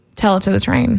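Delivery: plain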